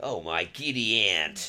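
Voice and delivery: low, attempted American accent. Podcast host repeats a catchphrase after his co-host, attempted american accent. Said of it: "That's not going to work".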